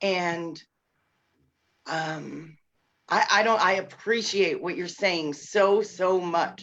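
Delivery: overcome, emotional, halting restarts, words tripping over each other. A mother thanking someone for what they said, overcome with emotion. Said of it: "I can't even communicate clearly because I'm so emotional right now".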